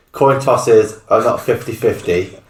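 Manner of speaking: usual speaking voice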